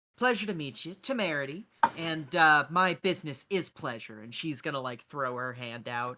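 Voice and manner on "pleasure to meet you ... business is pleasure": loud, cordial, very pleasant tone. A player's character Temerity greets someone and offers a handshake, putting on her best smile. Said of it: "put on her best kind of uh, smile".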